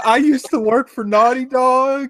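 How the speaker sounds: high, slow, distorted disguised voice.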